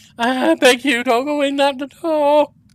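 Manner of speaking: trembling, wavering voice. Narrator voicing a young cleric who addresses you, in a quavering voice. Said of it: "addresses you in a quavering voice".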